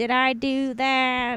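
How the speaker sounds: very slow, drawn-out put-on voice. Retelling a contestant doing a spot-on Urkel impression: Urkel voice. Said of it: "spot on Urkel impression".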